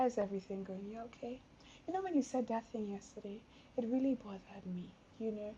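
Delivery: kind, calm manner. Showing how a wife might gently raise a hurt with her husband: kind, calm manner. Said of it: "in a very kind, calm manner".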